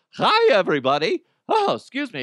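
loud, scratchy creature voice. Joking that this is how the character really talks: Chewbacca voice. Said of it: "that's how Chewbacca sounds".

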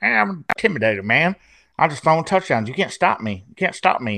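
strange, twangy mocking tone. Imitating a quarterback's odd trash talk: imitating Philip Rivers' odd trash talk. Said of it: "he talks shit, and he does it weirdly".

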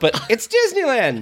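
very high-pitched, thrilled, excited yell. Repeating the yell from the story, now as a higher-pitched retold yell. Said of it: "Higher pitch voice".

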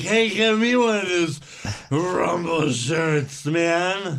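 put-on slow, drawn-out, stretched drunken man's drawl. Correcting another speaker's version of the quote, imitating drunk Eric. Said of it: "no, it was more like".

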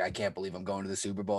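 acted tearful, overwhelmed crying out in disbelief. Retelling a player's reaction to reaching the super bowl: imitating crying and freaking out. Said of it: "crying, he was freaking out".

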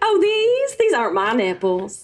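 mock Southern gentleman voice. Doing an impression asked for by another speaker, ordering a tuna sub: Lindsey Graham voice. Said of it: "could you do Lindsey Graham".

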